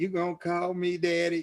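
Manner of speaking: put-on young woman's voice. Telling a joke, acting out a young gal asking the old man. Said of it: "it's a joke that goes like this".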